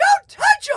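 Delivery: very loud, very high-pitched squeaky yell. Speaker reenacts yelling at a man going after a friend, retelling a high-pitched yell. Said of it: "my voice raised like 20 octaves and I went".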